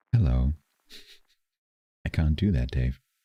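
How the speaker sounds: gentle, lulling, extra soothing, calm voice. Answering a remark about the voice by talking extra soothingly: extra soothing tone of voice. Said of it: "talk in an even more soothing tone of voice".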